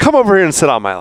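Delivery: play-acted, unsettlingly sweet, creepy coaxing. Retelling a villain's lines to a captive, imitating a creepy coaxing voice. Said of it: "make nice with her in just the creepiest ways possible".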